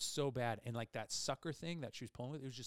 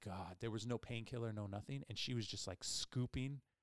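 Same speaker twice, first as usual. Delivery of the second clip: normal talking voice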